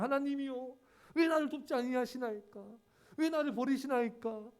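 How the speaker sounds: anguished, pleading outcry. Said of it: "막 절규하잖아요".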